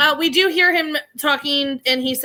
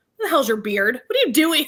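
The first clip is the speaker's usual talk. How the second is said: put-on angry shouting. Recapping a scene where Henry comes off a boat: mock-angry Henry outburst. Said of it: "Like he's all mad".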